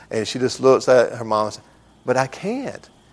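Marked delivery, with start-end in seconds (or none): 2.1-2.9 put-on soft, sweet, innocent little girl voice. Retelling a daughter answering her mom, in Bella's sweet innocent voice. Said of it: "in her sweet little innocent voice".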